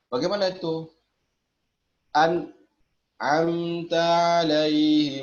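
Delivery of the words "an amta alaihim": pause after the syllable An. Showing a reading that has a break, pause after an. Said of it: "itu jeda ya, jadi tidak boleh ada uh, jeda".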